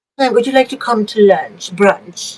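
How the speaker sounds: pretend elegant phone voice. Playing with a vintage phone and answering it: pretend elegant phone voice. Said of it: "I just wanna look elegant".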